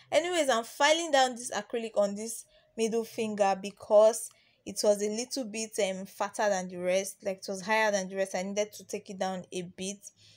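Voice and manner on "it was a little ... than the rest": rushed, fast voiceover delivery. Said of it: "I'm speaking so fast".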